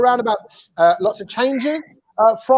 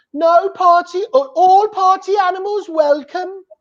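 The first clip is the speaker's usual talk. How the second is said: fairly broad Birmingham accent; 8 semitones higher than usual. Showing a guest named Naya how to say the show's welcome, Birmingham accent. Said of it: "in a Birmingham accent".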